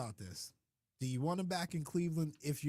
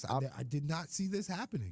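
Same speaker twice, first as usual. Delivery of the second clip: normal talking voice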